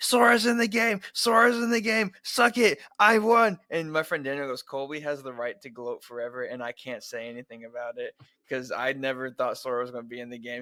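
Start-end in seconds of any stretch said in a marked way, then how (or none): 0.0-3.6 very high, loud, out-of-control screaming. Retelling own Discord reaction to a game reveal: re-enacting screaming. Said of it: "I went all over Discord screaming".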